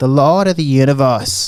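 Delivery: put-on preacher-style delivery in an Australian accent. Imitating a pastor's favorite phrase: imitating pastor's Australian accent. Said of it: "he says it in his, like, Australian accent".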